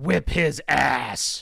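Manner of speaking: stern, rough, put-on fire-and-brimstone pronouncement voice. Retelling a middle school story, quoting a woman answering Mr. Stevens in a brimstone voice. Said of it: "she said with a brimstone voice of".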